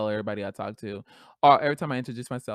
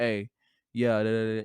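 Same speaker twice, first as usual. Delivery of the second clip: voice dropped a couple of octaves, deep and slow; 3 semitones lower than usual. Speaker retells answering a man who speaks to them, in a dropped, deeper voice. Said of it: "my voice drops a couple of noct- uh, octaves".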